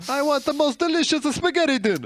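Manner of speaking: put-on squeaky-high, over-the-top, very thick Italian accent. Improvising a villain character, doing Count Nefaria's Italian accent. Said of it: "give him an Italian accent".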